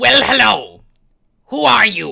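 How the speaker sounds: put-on bird-like creature voice. Narrating a scene, the speaker voices a character greeting newcomers: put-on Aarakocra voice. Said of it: "let me get the voice".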